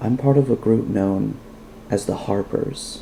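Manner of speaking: low, hushed, confidential whisper. She leans forward between you to tell you something: whispering in a low voice. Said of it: "leans forward between you and whispers in a low voice".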